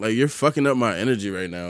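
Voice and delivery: ordinary talk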